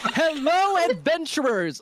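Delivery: very high, loud, excited bursting shout. Voicing a character kicking a door open: loud excited greeting. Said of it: "kicks another door open and is like".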